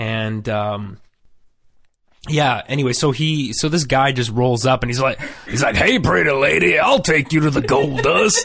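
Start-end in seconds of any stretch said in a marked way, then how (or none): 5.8-8.5 put-on pitched-up Texas accent. Retelling what a guy in a cowboy outfit says: imitating a texas accent. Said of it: "does everybody talk like this in Texas?".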